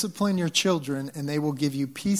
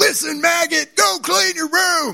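very loud, harsh, shrill, rasping drill-sergeant bark; 8 dB louder than usual. Retelling marching around the house ordering the kids: imitating drill sergeant dad yelling. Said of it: "Sergeant Dad comes out".

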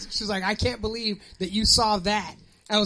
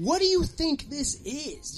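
high, overly soothing, super-calm voice; 5 semitones higher, 4 dB quieter than usual. Retelling a medical visit, the speaker quotes the lady, imitating a super-calm lady. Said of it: "acting like super calm".

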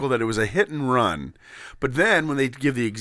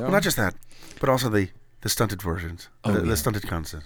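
low-pitched, put-on Irish accent; 4 semitones lower, 3 dB quieter than usual. Asked to read an article in a radio host's style, the speaker slips into an Irish accent. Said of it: "You're slipping into Irish guy".

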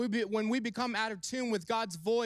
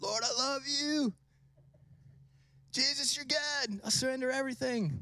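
laid-back beach surfer-dude voice; 2 semitones higher than usual. Retelling how his friend worshipped next to him: imitating Eric in surfer voice. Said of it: "I don't know why I sound like that".

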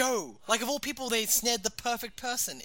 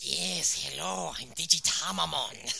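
very low, deep, slow, drawn-out, creaky drawl; 7 semitones lower than usual. Imitating a cartoon character's voice, a Peter Lorre voice. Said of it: "his voice is a Peter Lorre impersonation".

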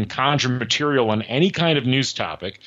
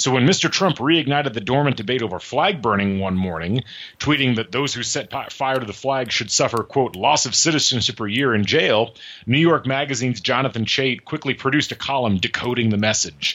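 ordinary delivery

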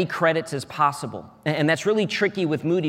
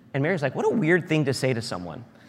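plain

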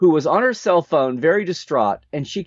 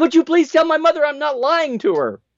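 mock yelling, higher pitch; 12 semitones higher than usual. Retelling a phone call and quoting what she yelled: retelling a yell. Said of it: "she yelled".

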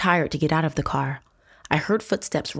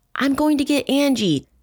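very high-pitched shouting; 10 semitones higher, 4 dB louder than usual. Narrating, Ted shouts over the narrator's own shouting: shouted. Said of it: "Ted shouted over my shouting".

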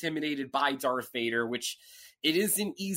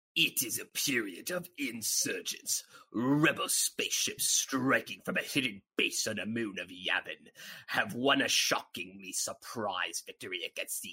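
voice dropped all the way down; 7 semitones lower, 4 dB quieter than usual. Reading the yellow opening text aloud, the Emperor voice. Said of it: "I'm going to read this as if I were the Emperor himself".

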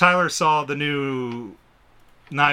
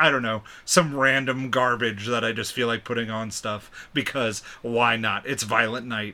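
ordinary talk

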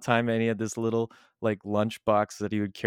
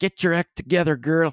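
put-on loud, high Newfoundland accent; 7 semitones higher, 5 dB louder than usual. Explaining what someone finds funniest, the speaker quotes a line in a put-on Newfoundland accent. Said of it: "tell you to in a newfie accent".

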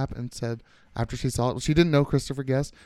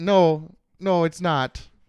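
put-on, homemade Canadian accent; 4 semitones higher, 4 dB louder than usual. Imagining how Canada would answer the flat earth question, Canadian accent impression. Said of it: "that's my Canadian accent".

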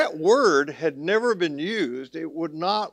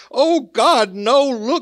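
frenzied, very slow, high, loud, drawn-out shout; 7 semitones higher, 8 dB louder than usual. Telling a joke, the speaker acts out the Pope's reply, retelling the Pope's shout. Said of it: "he shouts".

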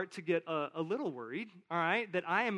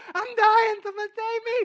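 shrill, very high, loud wailing scream with crying; 10 dB louder than usual. Recalling being lost as a third grader, acting out own past screams: retelling a scream. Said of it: "I am screaming at the top of my lungs".

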